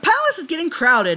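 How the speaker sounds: playfully needling teasing tone, a touch high. Narrator reading Meridaten's line to the family: teasing. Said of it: "Meridaten teased".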